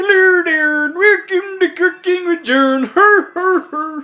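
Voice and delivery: very high, comic, put-on Swedish accent. Greeting viewers at the start of a cooking segment, in a Swedish Chef impression. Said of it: "that's my Swedish chef impression".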